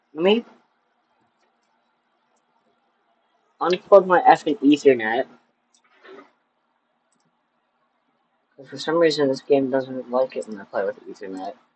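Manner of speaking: pissed off, angry and irritated. Player whose game keeps cutting out while playing with Jack, pissed off. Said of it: "I'm so pissed off right now".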